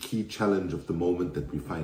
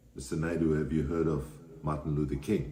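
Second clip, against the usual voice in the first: usual speaking voice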